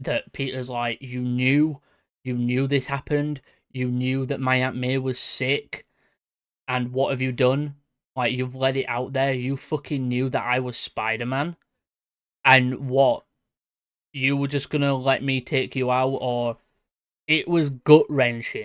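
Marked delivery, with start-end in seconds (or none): none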